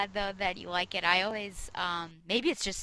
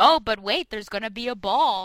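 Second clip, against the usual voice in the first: mock-sarcastic tone, pitched higher; 2 semitones higher than usual. Quoting back to the listener what they once said, imitating a sarcastic remark. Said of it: "you said something sarcastically".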